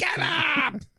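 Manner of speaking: very high-pitched scream, acted out. Describing waking up to a wife screaming, imitating her scream. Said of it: "our wife screaming".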